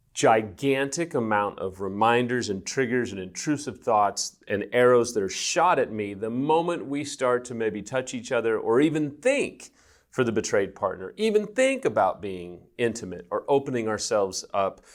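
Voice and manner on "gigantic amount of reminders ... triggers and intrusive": usual speaking voice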